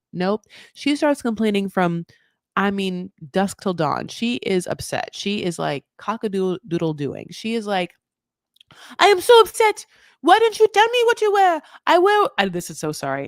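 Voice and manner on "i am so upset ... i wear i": bad put-on French accent, very high and swooping. Telling a story about her complaining on a special day, imitating Manon's French accent. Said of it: "My French accent is you know".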